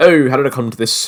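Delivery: put-on Australian accent. Playing through a village, the speaker voices a villager in an Australian accent. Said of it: "Why am I giving the folks, like, an Australian accent?".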